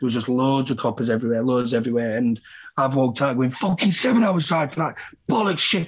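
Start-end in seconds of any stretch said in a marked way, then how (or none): 3.5-5.9 acted-out furious high shouting, screaming and swearing. Recalling walking out past the police after a long drive, retelling his own angry shouting. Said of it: "shouting and screaming".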